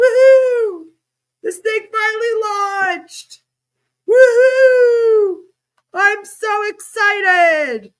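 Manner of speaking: wild whooping, long drawn-out woohoo, loud and high. Speaker imagines the team celebrating their first product launch: mock-excited cheering. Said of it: "celebrating like mad right now".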